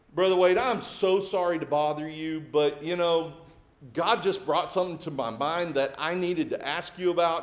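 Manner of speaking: ordinary talk, nothing marked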